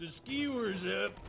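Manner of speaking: Texan announcer voice. Retelling a callout from the game's announcer nicknamed Captain Texas: imitating a Texan-style game announcer. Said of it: "Captain Texas".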